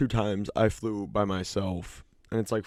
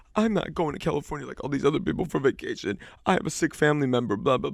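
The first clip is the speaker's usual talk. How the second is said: put-on drunk woman, high, tearful and crying; 4 semitones higher than usual. Retelling what a drunk woman at the gate said, imitating her crying. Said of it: "She was crying".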